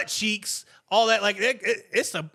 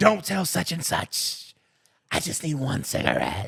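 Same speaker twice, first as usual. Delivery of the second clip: put-on slow, tipsy, drunken whisper; 5 semitones lower than usual. Retelling what someone said while drunk: imitating a drunk whisper. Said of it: "they'd whisper to me".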